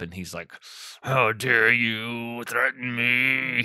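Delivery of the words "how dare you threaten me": put-on gritted-teeth delivery, much slower. Recapping an episode, imitating a character who talks through gritted teeth. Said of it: "He just kind of talks through gritted teeth".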